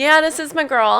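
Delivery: put-on calm, reserved voice. Showing how the reserved partner responds: imitating a calm boyfriend. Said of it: "perfect impression, by the way".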